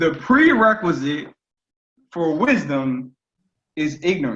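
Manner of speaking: slow, deliberate, halting, word-by-word delivery. Repeating a statement a second time for the listener, said slowly. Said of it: "I'm gonna say that again slowly".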